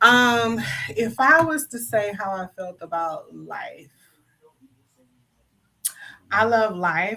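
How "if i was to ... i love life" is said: slow, deliberate, careful delivery, each word weighed. Asked how they feel about life, the speaker answers, talking slowly. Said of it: "I'm talking slowly and choosing my words".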